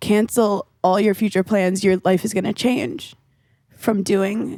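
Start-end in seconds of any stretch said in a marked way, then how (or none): none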